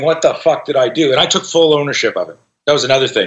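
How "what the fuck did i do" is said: tearful, crying lament. A dad retelling hard moments in his business, imitating his own crying. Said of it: "like crying, going".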